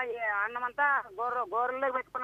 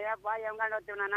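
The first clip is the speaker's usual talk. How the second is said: ordinary talk, nothing marked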